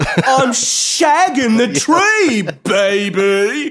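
very high, very slow, drawn-out drawl. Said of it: "Great impression that I did there".

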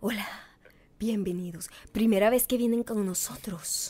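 hushed, tense, put-on calm voice. Retelling how a young man at a café greeted them: imitating a forced peaceful voice. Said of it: "esta voz como impuesta de paz".

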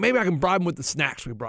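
ordinary delivery

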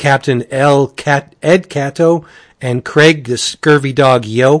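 ordinary delivery

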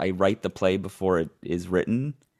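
plain

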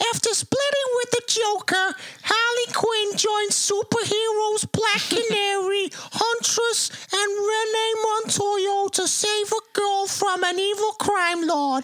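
whiny Bronx accent, put on. Asked to read a film synopsis in Harley Quinn's style, whiny Bronx Harley Quinn voice. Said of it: "so whiny Bronx".

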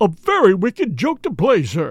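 tone of shocked, appalled dismay. Reading a novel aloud, the narrator voices Parker the butler in a shocked tone. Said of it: "in a shocked tone".

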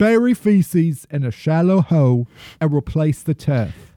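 fake British accent slipping Midwestern. Reading a set of rules aloud, in a fake British accent slipping Midwestern. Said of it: "It went to straight Midwestern British".

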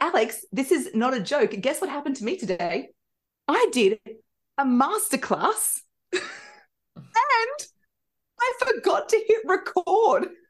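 really excited, bursting, high, swooping voice. Showing how to speak when having a bad day, really excited voice. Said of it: "just speak in a really excited voice".

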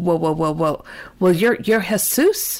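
acted-out stammer. Retelling the moment he started stuttering, replaying his own words: retelling his own stuttering. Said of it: "I start stuttering".

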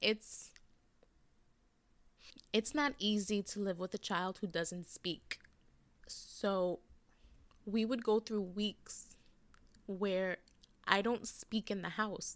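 emotional, moved. Speaker talking about feeling lonely for a long time, getting emotional. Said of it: "Oh my God, I'm getting emotional".

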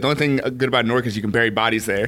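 ordinary talk

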